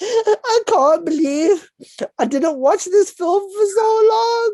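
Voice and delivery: acted crying, very high, slow, drawn-out sobbing wail. Retelling a partner's tearful phone call about a film: imitating someone sobbing. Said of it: "She's sobbing, like, actively sobbing".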